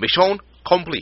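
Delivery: odd announcer-style voice, pitched very high. Reminiscing about Melee, quoting the game in a weird accent. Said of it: "Weird ass accent".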